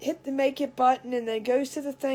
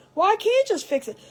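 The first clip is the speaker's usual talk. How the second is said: heated, high-pitched shouting; 8 semitones higher, 4 dB louder than usual. Retelling the other person yelling back: imitating someone yelling back. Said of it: "screaming back and forth and yelling".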